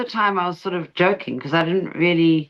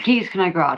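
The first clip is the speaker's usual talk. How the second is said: normal talking voice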